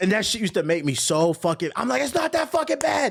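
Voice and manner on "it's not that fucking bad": put-on scream, pitched higher. Retelling what they used to yell at the TV: imitating own past screaming. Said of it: "I used to scream at the T V".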